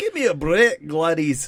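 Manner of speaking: loud, swooping, put-on Scottish accent. Joking with friends about the name gladys, said in a scottish accent. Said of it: "if you were Scottish".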